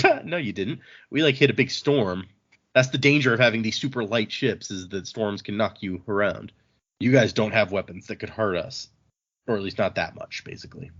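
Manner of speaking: ordinary talk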